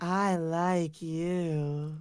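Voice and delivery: creepy, disturbing, gross put-on voice, "you" drawn out. Speaker demonstrating how to tell someone you like them, disturbing, disgusting voice. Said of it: "I think that voice is uh, quite disturbing and disgusting".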